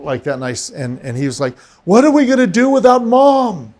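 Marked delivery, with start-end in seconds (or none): 1.8-3.5 acted scream through sobs, very high, loud. Retelling what the son kept screaming, imitating a crying scream. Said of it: "Kept screaming that".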